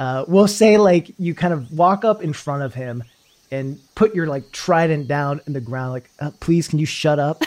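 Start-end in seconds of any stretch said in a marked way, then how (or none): 6.2-7.4 mock meek, not very intimidating tone. Retelling the player's line to someone: imitating a not very intimidating request. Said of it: "as you say this in a not very intimidating way".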